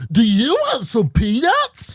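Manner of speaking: high squeaky voice with big pitch swoops. Demonstrating the kind of weird voice that gets them excited, Kermit the Frog voice. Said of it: "Like Kermit the Frog".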